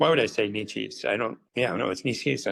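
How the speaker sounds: ordinary delivery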